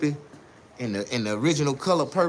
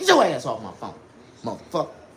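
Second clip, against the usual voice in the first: put-on swooping, heated cussing; 3 semitones lower than usual. Retelling a late-night phone call with a daughter: retelling cussing someone out. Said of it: "I had to cuss her ass out".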